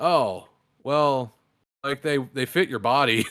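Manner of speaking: acted let-down, deflated, disappointed voice. Retelling a story about a man's reaction, imitating a disappointed man. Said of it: "The disappointment in that man's voice".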